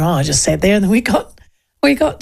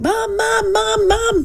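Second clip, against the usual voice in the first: put-on very slow, high, drawn-out child's yell; 13 semitones higher than usual. Retelling her girlfriend's child calling for her mum; imitating a child yelling. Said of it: "she started yelling".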